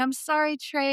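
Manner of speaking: sobbing, wailing, high tearful bawling cry. Retelling being carried away by three police officers: retelling bawling and screaming. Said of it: "I was bawling, I was screaming".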